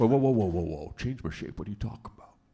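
put-on sea monster voice. Voicing the Kraken, asked to change its shape: Kraken voice. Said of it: "hello, Kraken".

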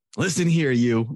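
put-on sassy voice. Retelling a child scolding a stuffed animal: imitating sassy scolding. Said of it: "she's getting sassy with it".

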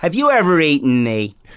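smart-alecky, wise-guy cartoon character voice. Voice actor showing what his commercial candy character sounds like, red M&M voice. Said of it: "it's basically like my wise-ass voice".

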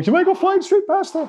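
high-pitched silly voice. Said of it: "You don't have to make the silly voice".

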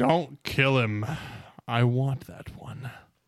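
thunderous, booming shout at full volume. As five men corner the player, a voice calls out: loud booming voice. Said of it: "a loud booming voice".

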